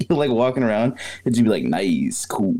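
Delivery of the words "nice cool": mock stoned, spaced-out seventies guy voice. Imitating a man stuck in an acid trip: imitating a stoned seventies guy. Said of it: "he just talks like he's from the seventies constantly".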